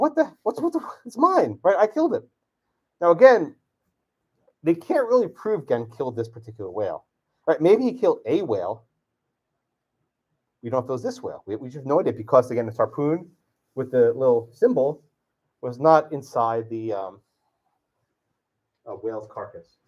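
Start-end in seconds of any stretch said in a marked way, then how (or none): 0.0-2.2 high, indignant outburst. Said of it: "he's like".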